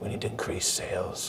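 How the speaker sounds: deep, very quiet, whispered superhero voice. Describing nervous staff pitching a plan to the boss; whispering Batman voice. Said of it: "Why are you whispering and why are you talking like Batman?".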